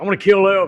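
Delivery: mock joking tone. Retelling what a man with a gun on the dash said; retelling a joking remark. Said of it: "he kind of just jokingly goes".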